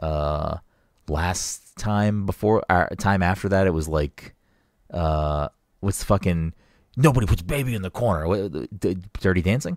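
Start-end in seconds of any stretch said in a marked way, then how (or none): 7.0-8.3 violent, forceful, hurled-out delivery. Trying to recall a movie title, quoting its line: quoting a movie line violently. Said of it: "you said that very violently".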